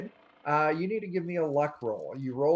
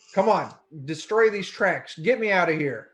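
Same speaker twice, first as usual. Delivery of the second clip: shouting, yelling and begging, pleading; 4 dB louder than usual. Voicing a dragon calling to the players as they fly past: yelling and pleading. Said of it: "She starts yelling at you and pleading with you".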